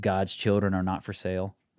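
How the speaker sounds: normal talking voice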